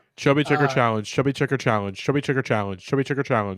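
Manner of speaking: rapid tongue-twister, repeated fast over and over. Taking a challenge to repeat the phrase as much as possible: rapid tongue-twister repetition. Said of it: "say the words Chubby Checker Challenge as much as you can".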